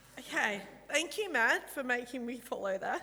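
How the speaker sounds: emotional, choked up. Speaking right after the previous speaker, addressing matt, choked up. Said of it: "I'm a mess".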